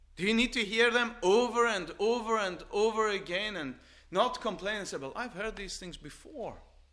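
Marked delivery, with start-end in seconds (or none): 5.0-6.6 softer, bored, dismissive, eye-rolling tone. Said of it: "That's why you're talking like that".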